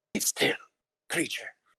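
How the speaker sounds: loud, harsh, rasping, forceful whisper. Player voicing Beta, speaking Giant to a creature by the ogre's pit, harsh whisper. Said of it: "Beta will give a kind of like harsh whisper".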